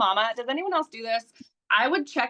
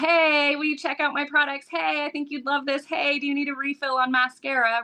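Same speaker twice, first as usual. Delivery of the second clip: acted pushy, pleading, begging hard-sell sales voice; 4 semitones higher than usual. Recalling being glued to her phone pushing products, she replays it, retelling pushy begging. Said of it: "begging people".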